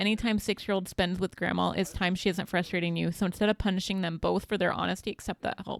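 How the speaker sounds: plain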